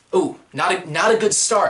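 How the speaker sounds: plain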